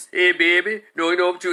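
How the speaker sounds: put-on casual New Orleans street accent. Showing how people in New Orleans sound: New Orleans accent. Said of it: "And go down to New Orleans".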